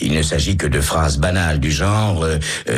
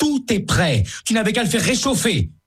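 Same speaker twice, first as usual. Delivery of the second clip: very high, shrill shouting. Élise answers her husband, who shouted at her: shouting back. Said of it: "réplique Élise en criant elle aussi".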